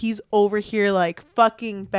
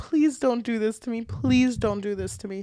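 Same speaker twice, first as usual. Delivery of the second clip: acted tearful, crying, pleading voice; 3 semitones higher, 4 dB quieter than usual. Recounting a story, acting out a man pleading with a woman while crying. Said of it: "getting dressed while crying".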